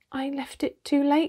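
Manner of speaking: embarrassed voice. Susan answers Peter after the bear is shot, in an embarrassed voice. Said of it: "said Susan in an embarrassed voice".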